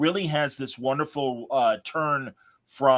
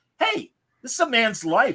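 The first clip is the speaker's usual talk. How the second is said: put-on intense outburst, higher; 10 semitones higher than usual. Retelling a juror confronting another who changed his vote: imitating an intense outburst. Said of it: "great intense moment after being so meek".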